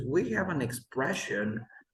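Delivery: ordinary talk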